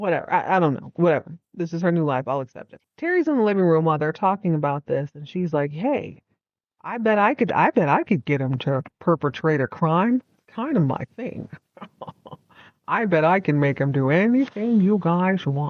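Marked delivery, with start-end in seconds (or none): 5.7-15.7 put-on old-time gumshoe detective voice. Retelling what Terry says in the living room: Terry's voice, like Dick Tracy. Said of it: "I'm talking like this because Terry talks like".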